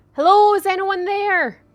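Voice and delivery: loud shout, pitched very high. A player's character in a roleplaying game calls into the area, shouting out. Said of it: "I just want to shout out".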